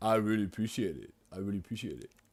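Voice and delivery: put-on mocking voice. Showing how Bo mocks him, imitating Bo's impression of him. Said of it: "me doing an impression of Bo doing an impression of me".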